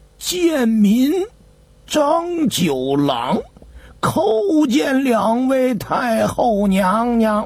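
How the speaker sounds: put-on quavering, trembling, humble old man's voice. A dried-up old man kneels before two empress dowagers, speaking in a trembling voice. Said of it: "颤声地奏道".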